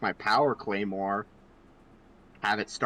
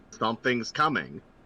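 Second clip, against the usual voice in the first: ordinary talk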